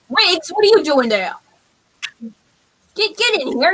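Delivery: rough, gruff, hefty, beefy goblin brute voice. A guard at a door questions someone outside, then orders them to come in. Gruff beefy goblin voice. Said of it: "He's like".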